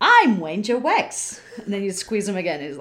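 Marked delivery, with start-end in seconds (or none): 0.0-1.4 high-pitched talking teddy bear voice with a slight lisp. Quoting what a squeezed teddy bear says, in a lisping Ranger Wex voice. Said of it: "this little lisp".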